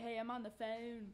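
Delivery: Ohio accent with drawn-out O's. Showing the group the Dayton, Ohio accent they were trying to do. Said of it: "the Dayton, Ohio accent that we were trying to do".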